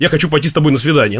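normal talking voice

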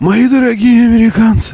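very high, put-on elderly old-man voice. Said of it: "Как он говорит вообще? Мои дорогие... Как мистер Бернс в «Симпсонах»".

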